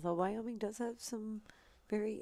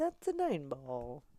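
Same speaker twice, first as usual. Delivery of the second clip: poor, put-on Italian accent; 4 semitones lower, 4 dB louder than usual. Redoing a nine ball call as heard in the head: bad put-on Italian accent. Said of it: "in my head I heard it like Italian".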